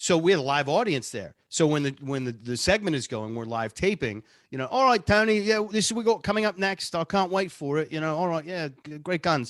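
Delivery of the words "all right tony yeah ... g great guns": put-on British accent, higher. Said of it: "He's got two voices".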